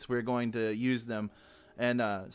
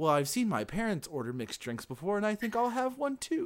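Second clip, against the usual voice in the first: put-on high, would-be grown-up kid voice; 9 semitones higher, 3 dB quieter than usual. Imitating a kid copying the parents' drink order: mimicking a kid acting grown-up. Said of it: "like a kid who's trying to be like".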